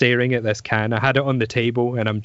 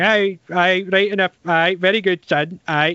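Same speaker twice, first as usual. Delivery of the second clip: put-on old woman's voice, higher pitched; 7 semitones higher than usual. Retelling what Gran said about opening the can: imitating Gran. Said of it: "And she's like".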